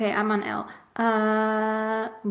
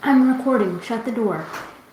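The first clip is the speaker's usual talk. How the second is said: serious, no-nonsense, stern parent voice; 6 dB louder than usual. Telling someone to shut the door while recording: serious mom voice. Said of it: "serious mom voice now".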